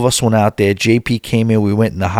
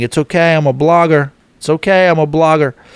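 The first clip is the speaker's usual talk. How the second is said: mild, high-pitched yell; 5 semitones higher than usual. Recounting squeezing past people leaving the ship, retelling own screaming. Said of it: "And I'm screaming".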